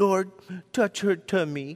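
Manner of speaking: put-on soft small child voice. Retelling how a boy prayed over a kid's sore tummy, in his little kid voice. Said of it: "in his little kid voice".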